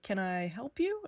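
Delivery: put-on halting, doubtful, hesitant, unsure voice. Retelling a man's reaction on seeing the speaker: imitating a hesitant voice. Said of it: "he kind of had that hesitation in his voice".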